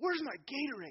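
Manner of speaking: put-on very high, shouted kid's yell. Retelling a kid yelling from the dugout to his parents in the stands, imitating a kid yelling. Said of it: "yells into the crowd".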